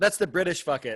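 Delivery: normal talking voice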